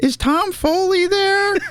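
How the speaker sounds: put-on very high, slow, drawn-out little-kid voice. Imitating a child phoning a bar for his dad: little ten-year-old voice. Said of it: "a little ten-year-old voice being like".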